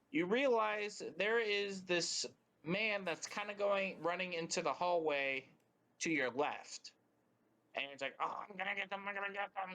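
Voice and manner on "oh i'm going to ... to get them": fast, disgruntled grumbling muttered under the breath. A game narrator voices a man running into a hallway; unhappy muttering. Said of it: "You hear some muttering coming from him".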